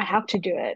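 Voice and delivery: ordinary talk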